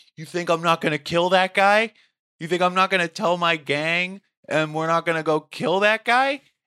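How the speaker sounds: loud, high-pitched screaming. Retelling what a man said when cops asked what happened, imitating a man screaming. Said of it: "he starts screaming".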